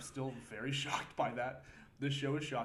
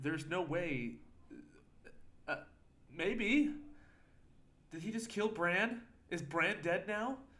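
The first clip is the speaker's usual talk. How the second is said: rattled and flustered, higher pitch; 6 semitones higher, 4 dB louder than usual. Reacting to a show where a character may have died: flustered. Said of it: "I'm a little flustered here".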